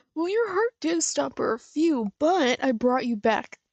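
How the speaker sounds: crazed, unhinged character voice. Reacting to a scene, imitating crazy Tails. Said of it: "That's kinda shit crazy Tails would say".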